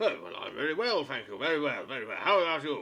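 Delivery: put-on loud, old dwarf voice. Voicing an old dwarf who greets the players: voicing a dwarf. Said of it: "Old Winnie, the dwarf".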